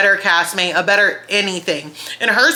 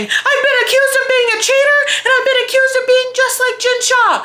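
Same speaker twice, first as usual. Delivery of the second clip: mock very high, tearful sobbing voice; 3 dB louder than usual. Retelling how Lisa complained while sitting there crying: imitating Lisa crying. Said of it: "She is literally sitting there crying, saying".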